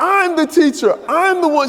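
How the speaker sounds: very high, loud, worked-up ranting. Retelling a sister's reaction on the phone: imitating sister going off. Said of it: "She starts going off".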